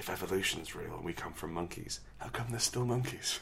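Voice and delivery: hushed, very quiet, confidential half-whisper. Imagining Tim Allen leaning in while choking you: half-whispering as Tim Allen. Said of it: "he leans in and then whispers".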